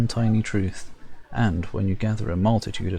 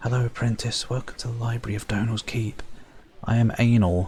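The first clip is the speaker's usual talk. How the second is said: hushed whisper; 2 semitones higher than usual. A narrator voices a librarian greeting an apprentice, whispering. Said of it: "She whispers".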